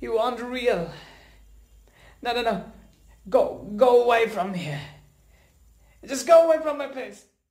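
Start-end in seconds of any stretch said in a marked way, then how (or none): 2.2-7.2 panicked, higher pitch. Telling a presence they say isn't real to leave: panicked. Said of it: "Calm down".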